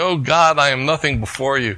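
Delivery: loud, carrying cry called out aloud. Telling a joke about a janitor at a service: imitating a loud call-out. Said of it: "he calls out loudly".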